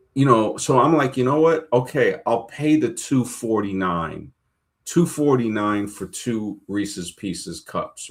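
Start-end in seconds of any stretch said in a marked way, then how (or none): none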